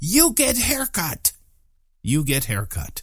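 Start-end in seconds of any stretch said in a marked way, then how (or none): 0.0-1.3 light, swooping, mocking token yell. Speaker retells a man in the crowd yelling at him, retelling a yell at full volume. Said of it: "he yelled out as loud as he could".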